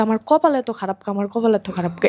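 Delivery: ordinary delivery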